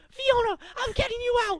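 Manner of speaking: loud, frantic high-pitched yelling.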